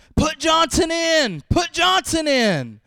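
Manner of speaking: very high, swooping, irate, angry hollering. Telling a joke about a losing football team, retelling an irate fan's yell. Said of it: "One irate fan yells from the sidelines".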